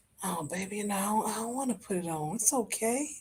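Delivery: hushed, soft, intimate half-whisper. Speaker acting out what he half-whispers in your ear, acting out a half-whisper. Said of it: "he whispers in your ear".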